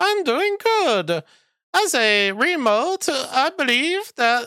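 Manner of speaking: squeaky, very high ventriloquist puppet voice. Speaker makes a little remote talk back to him like a puppet: ventriloquist remote puppet voice. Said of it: "That's my best ventriloquism".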